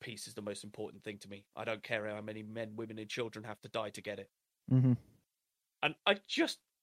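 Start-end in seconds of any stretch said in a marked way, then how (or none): 0.0-4.3 put-on deadpan voice, quieter. Quoting a favourite line that John Cena says: John Cena deadpan delivery. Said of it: "deadpan delivery of hilarious lines".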